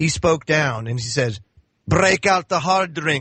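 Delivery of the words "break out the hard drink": put-on Scottish accent. Retelling what God says to do on feast days, as God in a Scottish accent. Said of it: "in his Scottish accent".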